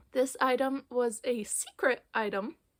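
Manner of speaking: voice cracking and breaking mid-line. Showing viewers a secret craft item for the first time, voice cracking. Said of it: "Why did my voice just crack?".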